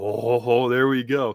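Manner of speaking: mock excited voice. Retelling a character whose moment to fight comes: imitating someone excited. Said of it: "He's so excited".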